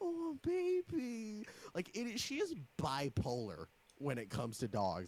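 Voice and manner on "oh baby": mock very high, gooey, doting melty gush. Imitating Mom when a cute dog comes in: imitating mom going melty. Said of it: "she'll get really melty".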